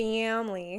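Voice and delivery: Michigan accent, loud intense A in "family". Show listeners how your own accent came out on a word, Michigan accent, very intense A. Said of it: "there's my Michigan accent coming out. Um, those like very intense A's".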